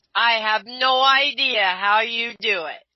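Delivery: very slow, dripping, laid-on-thick sarcasm. Answering another speaker's boast about picking songs, heavy sarcasm. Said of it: "with all the sarcasm I can muster".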